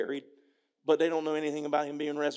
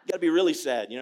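usual speaking voice

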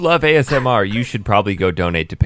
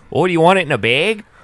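put-on Upper Peninsula Michigan accent; 9 semitones higher than usual. Acting out the lady who offered the speaker a bag, imitating a true Yooper accent. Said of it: "a true Youper accent".

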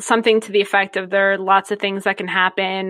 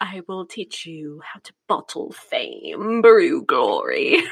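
very slow, swooping, calculated delivery, every word stretched; 3 semitones lower than usual. Recalling how Alan Rickman delivered his lines as Snape, slow Alan Rickman impression. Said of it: "Very slow".

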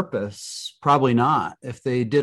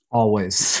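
fake straight-faced, sarcastic deadpan on "always". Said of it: "I can't even say it with a straight face".

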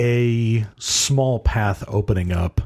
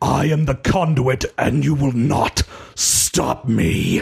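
rasping voice, hurled out; 3 semitones higher than usual. Game narrator voicing a character charging through a mob, roaring. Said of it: "and he roars at them".

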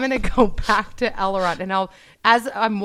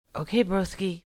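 quiet, hushed whisper; 7 dB quieter than usual. Answering a companion, whispering. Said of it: "Why are you whispering?".

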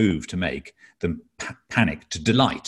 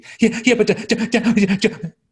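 put-on mimicked panicky child voice, higher and louder; 6 dB louder than usual. Acting out a panicking son being calmed down: imitating a panicking child. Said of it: "was having a panic about something".

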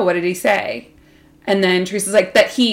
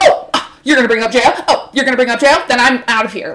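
acted-out provoked outburst; 4 semitones higher, 5 dB louder than usual. Retelling how Teresa reacted to Jackie, acting out getting set off. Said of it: "that set Teresa off".

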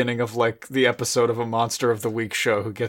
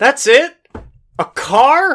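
very loud, high-pitched, drawn-out booming yell; 11 dB louder than usual. Playing Abbott, yelling out after a car passes: in character as Abbott, yelling.

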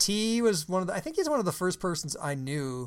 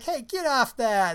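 playful teasing, pitched up and drawn out; 7 semitones higher, 4 dB louder than usual. Retelling a man laughing on a kid's ride with friends, acting out teasing someone. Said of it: "I was teasing him".

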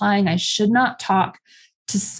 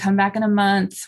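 ordinary talk, nothing marked

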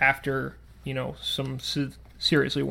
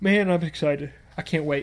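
speaking through a yawn. Podcast host talking to co-host about upcoming plans, yawning. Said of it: "you're so excited you're yawning".

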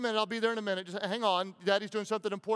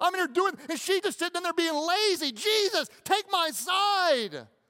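put-on distressed woman voice, higher; 9 semitones higher, 4 dB louder than usual. Preaching, the speaker voices Martha's complaint in a mock-distressed woman's voice. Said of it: "woman in distress voice".

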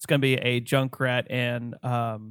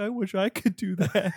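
weepy, high, sobbing lament; 7 semitones higher than usual. Describing a gif where Reinhardt sits down: imitating Reinhardt crying. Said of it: "starts crying, like".

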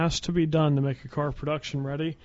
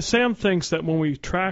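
ordinary talk, nothing marked

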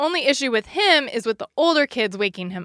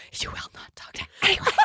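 fierce, angry whisper, acted out; 8 semitones higher, 6 dB quieter than usual. Describing bursting into the room, the speaker acts out an angry whisper. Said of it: "This is my angry whisper".

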